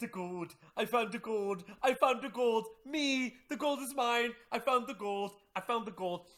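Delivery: wild, triumphant, loud, crowing excited shouting. Retelling a favorite scene where he finds the gold, acting out a scene character. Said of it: "he starts going".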